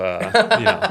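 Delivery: high, loud, mocking put-on voice.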